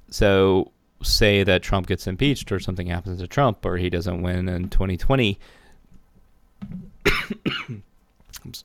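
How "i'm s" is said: choking up, coughing through the words. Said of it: "I'm choking up here".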